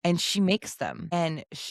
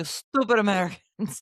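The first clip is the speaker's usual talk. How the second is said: fake Russian accent sliding from a French one; 3 semitones higher, 4 dB louder than usual. Joking about cooking mistakes with a co-host, mock Russian-sounding accent. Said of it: "I think I was Russian more there than French".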